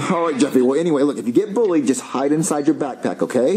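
ordinary talk

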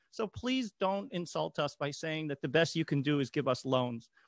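plain

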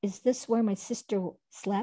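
ordinary delivery

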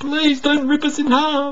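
shrill, very high, loud, fervent bleating. Narrator reads the ambassadors pleading with the creature, fervently bleated. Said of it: "they fervently bleated".

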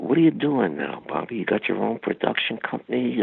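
soft-spoken movie-star voice. Retelling what the actor asked Bobby at their first meeting, soft-spoken Robert De Niro impression. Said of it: "he talked so soft".

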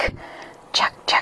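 soft hissed whisper, barely voiced. A voice answers the narrator from the fog, whispering Jack-o'-lantern voice. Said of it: "a voice whispered back at me from the fog. ... the voice hissed from a completely different section of the swamp. ... the voice hissed softly right into my ear. And I looked up into the glowing red eyes and twisted face of the jack-o'-lantern".

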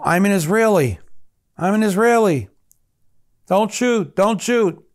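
put-on high screaming shout, repeated over and over. Retelling a hostage's cry to soldiers: imitating someone screaming. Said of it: "he's screaming out in Hebrew".

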